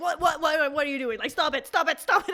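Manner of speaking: high-pitched, very loud screaming. Retelling a mother's reaction during a car ride: imitating mom screaming. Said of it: "my mom is, like, screaming".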